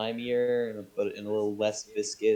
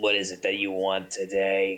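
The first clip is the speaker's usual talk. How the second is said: put-on elderly, eighty-year-old man's speech; 4 semitones lower than usual. Retelling a young-looking man behind the counter greeting you, in an eighty-year-old man voice. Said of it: "he speaks like an eighty year old man".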